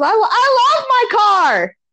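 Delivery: play-acted very high, very slow, drawn-out yell. Speaker retells yelling an answer across to a woman who misheard: retelling yelling across. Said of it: "And I'm yelling across".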